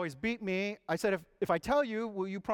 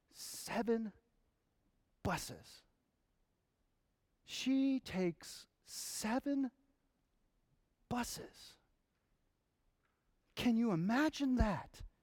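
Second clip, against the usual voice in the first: soft, mock words gasped out between sobs; 4 semitones higher, 5 dB quieter than usual. Telling a story, the speaker acts out Rigo catching his breath: retelling gasping between sobs. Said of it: "he gasped out between his sobs".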